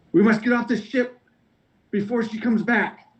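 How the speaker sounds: very high, frantic, panicked shout. Game narrator voicing a man the players touch, panicked yell. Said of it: "he like yells in a panic".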